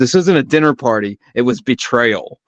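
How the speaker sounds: plain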